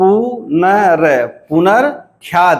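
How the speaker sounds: punarkhyati broken slowly into careful, separate syllables. Explaining how to split a Hindi word, said slowly, syllable by syllable. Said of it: "इसको धीरे से अगर हम बोलेंगे तब समझ में आएगा।".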